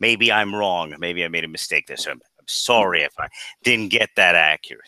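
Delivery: low, heavily sarcastic mock tone.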